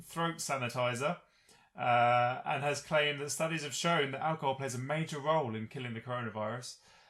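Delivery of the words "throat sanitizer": normal talking voice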